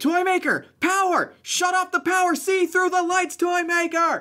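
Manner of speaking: shrill, very high screamed yell. Recounting a game moment, calling out to another character; retelling own scream. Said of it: "I just start screaming like".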